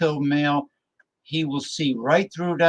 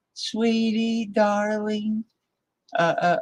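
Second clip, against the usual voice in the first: put-on high-pitched, childlike little baby talk; 7 semitones higher than usual. Describing people laying guilt trips on a man with a little baby voice. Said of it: "using a little baby voice like".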